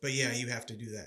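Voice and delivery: ordinary talk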